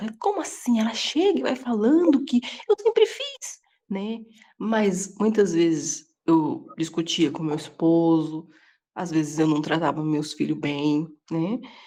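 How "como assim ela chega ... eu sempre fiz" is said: high, whispered, furious, indignant outburst. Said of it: "mas eu fiquei muito brava".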